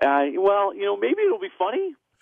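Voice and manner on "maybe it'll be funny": voice breaking mid-phrase. Answering whether looking forward to next week's movie: voice cracking. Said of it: "your voice just cracked".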